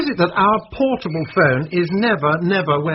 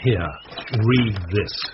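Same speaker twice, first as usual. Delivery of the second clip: grave, very low, ominous voice; 8 semitones lower, 3 dB quieter than usual. Handing over a letter to read, in an ominous bad-news tone. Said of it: "When you say read this in that tone of voice".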